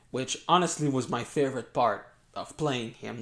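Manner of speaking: ordinary talk, nothing marked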